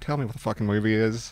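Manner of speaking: ordinary delivery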